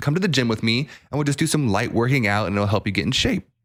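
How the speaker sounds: plain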